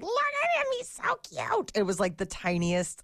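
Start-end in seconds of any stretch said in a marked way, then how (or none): 0.0-1.7 mock gushing, crazy cutesy voice. Retelling seeing a tiny dog on a walk: retelling crazy cutesy voice. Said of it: "went into that crazy voice mode".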